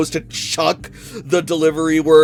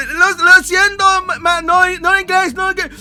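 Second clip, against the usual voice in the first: mock frightened, shocked stammer, very high; 14 semitones higher than usual. Voicing a delivery driver staring at a customer, scared and shocked. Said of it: "scared and shocked".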